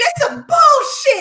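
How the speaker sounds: angry, pissed-off, high and loud ranting.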